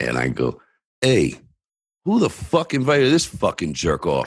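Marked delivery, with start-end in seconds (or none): 1.0-4.3 mock bellowed, full-volume, high swooping, taunting yell. Retelling walking up to a kid at a party: retelling a loud yell. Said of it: "But very loud, like, very loudly".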